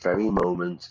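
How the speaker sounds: plain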